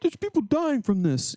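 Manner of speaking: indignant, outraged scolding tone.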